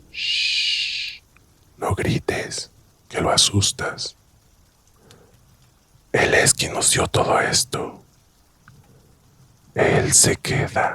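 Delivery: eerie, strange possessed voice. Reading a horror story aloud, the possessed husband speaks: eerie voice not his own. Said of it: "con una voz que no era la suya".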